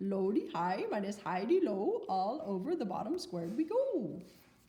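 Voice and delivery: horrible fake sing-song Swedish accent. Saying the memory rhyme one more time for listeners, in a horrible swedish accent. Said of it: "with a horrible Swedish accent".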